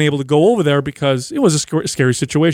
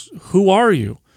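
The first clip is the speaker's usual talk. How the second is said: mock bewildered, super confused and puzzled tone; 3 semitones higher than usual. Retelling what a former client said on meeting at the grocery store: imitating Barbara sounding confused. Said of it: "super confused".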